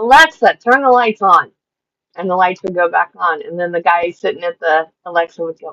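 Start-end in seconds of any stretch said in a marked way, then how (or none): 0.0-1.5 put-on high, drawn-out yell. Retelling a funny video of someone in another room: imitating someone yelling. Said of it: "the person from the other room would yell".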